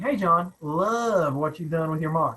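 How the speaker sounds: put-on sarcastic tone. Acting out a rival's cease and desist letter: imitating a sarcastic tone. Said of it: "Sarcasm, sarcasm".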